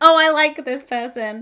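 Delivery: very loud, laughing out loud through the words. Reacting to a notification on an app, laughing.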